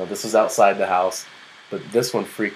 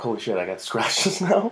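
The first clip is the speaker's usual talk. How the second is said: acted freaked-out, panicked, disbelieving tone; 2 semitones higher, 3 dB quieter than usual. Retelling a reaction to finding scratches: imitating own freaked-out reaction. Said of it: "I was kinda freaking out".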